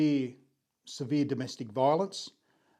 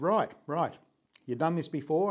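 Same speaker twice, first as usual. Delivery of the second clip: put-on strong English accent, higher; 3 semitones higher than usual. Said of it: "with a very strong English accent".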